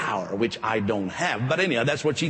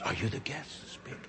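put-on prayerful tone, much quieter; 12 dB quieter than usual. Retelling how a lady approached them after a handshake line, imitating a praying tone. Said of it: "with kind of a praying tone of voice".

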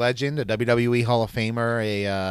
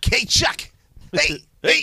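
silly put-on voice, much higher and slower; 11 semitones higher than usual. Joking with a co-host on air, greeting chuck in an unidentified silly voice. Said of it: "I don't know what this voice is, but I'm doing it anyway".

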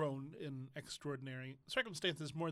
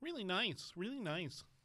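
mocking, sarcastic delivery, pitched up; 5 semitones higher than usual. Agreeing that the studio people are really nice: sarcastic. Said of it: "sounds sarcastic".

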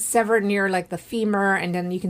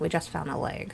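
very soft, hushed whisper; 4 semitones lower, 9 dB quieter than usual. Retelling how a detective told an officer the news: imitating a whisper. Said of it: "And he whispers to him".

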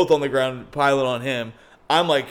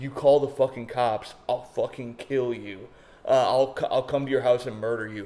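mock threatening whisper, quieter; 5 dB quieter than usual. Retelling what a guy said after hugging the speaker: imitating a threatening whisper. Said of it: "he whispers in my ear".

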